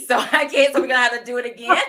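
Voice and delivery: loud talk, words breaking through laughter. Drawing a giveaway winner and landing on own name: laughing while talking. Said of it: "I'm laughing 'cause it's me".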